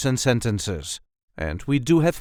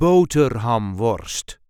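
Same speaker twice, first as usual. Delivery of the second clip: first syllable 'bo' lightly stressed; 4 semitones lower than usual. Teaching how to say a Dutch word, with light stress on 'Bo'. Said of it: "light emphasis on the first syllable".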